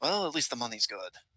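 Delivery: muttering under breath. Voicing a character adding gems to a pile, muttering under his breath. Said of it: "mutter to himself under his breath".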